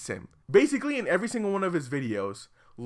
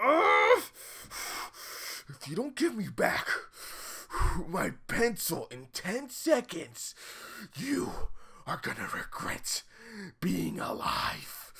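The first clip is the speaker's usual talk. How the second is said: whispered, strained, overdone fake-angry tone; 2 semitones higher, 5 dB quieter than usual. Impersonating a classmate whose favorite pencil was taken, imitating a kid faking anger. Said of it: "tries really hard to be angry at you".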